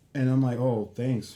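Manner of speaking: normal talking voice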